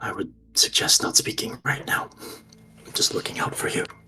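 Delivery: hushed, very quiet, almost a whisper. Narrating a game, voicing someone next to the players who questions them, almost a whisper. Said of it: "in a very, very silent voice, almost a whisper".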